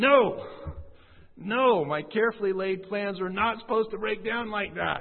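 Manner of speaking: high, loud, angry, rebellious outburst.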